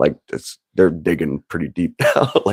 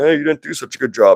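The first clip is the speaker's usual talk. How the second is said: stern, disapproving scolding tone pitched a little higher; 6 semitones higher than usual. Retelling the Cain and Abel story, acting out God: God scolding. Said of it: "And God was like".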